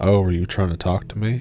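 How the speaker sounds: usual speaking voice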